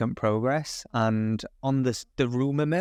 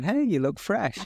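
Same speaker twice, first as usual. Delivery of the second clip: sarcastic, honeyed, pitched-up tone; 7 semitones higher than usual. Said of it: "You're going".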